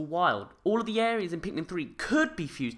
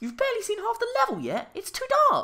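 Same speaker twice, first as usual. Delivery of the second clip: very high-pitched voice with swooping pitch. Video narrator voicing an imagined viewer's objection; high-pitched voice. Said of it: "why you have such a high-pitched voice".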